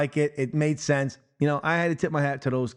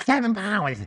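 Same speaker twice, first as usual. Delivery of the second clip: high, squeaky voice with a lisp; 7 semitones higher than usual. Showing how a cool line falls flat, high squeaky lisping voice. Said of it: "delivered in like a high squeaky voice with a lisp".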